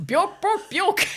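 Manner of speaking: gibberish belted at high pitch. Joking about how Swedish an interview could be, do a Swedish Chef voice. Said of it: "Remember the Swedish chef on the Muppets?".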